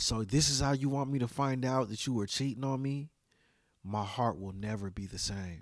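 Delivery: imitated trembling voice. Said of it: "his voice started shaking".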